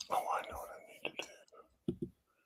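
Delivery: hushed whisper. Talking to oneself at the computer, whispering. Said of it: "Why are you whispering?".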